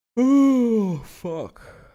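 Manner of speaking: very high-pitched yawn with "oh" stretched out. Commentating a slow baseball game, speaking through a yawn. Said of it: "Sorry, I'm yawning there".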